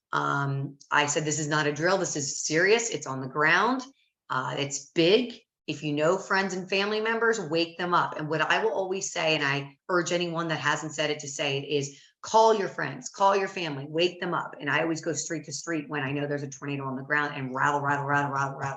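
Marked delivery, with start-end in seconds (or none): none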